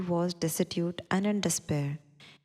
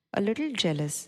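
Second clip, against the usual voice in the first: normal talking voice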